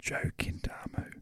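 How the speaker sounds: barely voiced, very soft near-whisper. Speaker announces the guest pianist's name, very softly. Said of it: "I'm just going to say it very softly".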